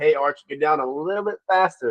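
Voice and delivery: ordinary talk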